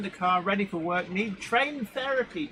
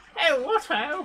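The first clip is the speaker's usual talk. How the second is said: very posh, upper-class English voice, pitched up; 8 semitones higher, 3 dB louder than usual. Guessing how a video's narration will sound: very posh voice. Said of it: "it will presumably have a very posh".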